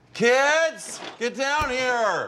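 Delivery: put-on shrill, high yell with "kids" stretched long. A parent calls the kids down from upstairs: yelling. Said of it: "Why are you guys yelling at us".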